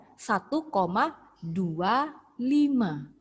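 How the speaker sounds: slow reading, each digit said separately.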